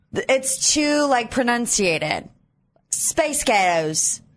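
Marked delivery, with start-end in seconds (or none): 2.9-4.1 Scottish-accented speech. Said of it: "that sounds more like girls".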